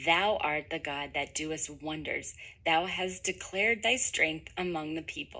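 ordinary talk, nothing marked

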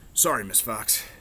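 ordinary delivery

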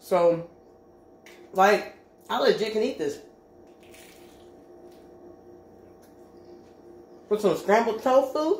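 talking while eating, mouth full. Tasting a homemade fake bacon sandwich, eating while talking. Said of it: "I'm talking with my mouth open".

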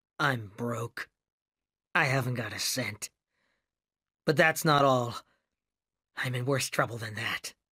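dull, flat, lifeless, toneless voice. A man answers the narrator's question about the check, in a dull voice. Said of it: "he said in a dull voice".

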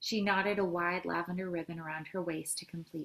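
ordinary delivery, nothing marked

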